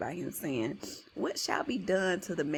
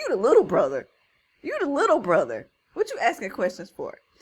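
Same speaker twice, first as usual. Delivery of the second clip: mock booming, swooping, loud, fast angry voice; 4 semitones higher, 9 dB louder than usual. Retelling the David story, voicing Eliab scolding his little brother; mock-angry Eliab. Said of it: "He mad".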